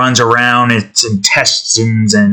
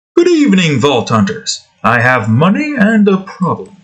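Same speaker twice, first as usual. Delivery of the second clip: put-on refined British gentleman voice, higher; 6 semitones higher than usual. Reading out a quest message: Sir Hammerlock voice. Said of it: "Canto his voice".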